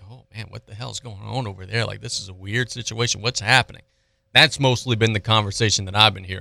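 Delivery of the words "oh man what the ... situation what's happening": whispered, quiet. Retelling what people say about the coaching situation: imitating people whispering. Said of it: "kinda whispering like".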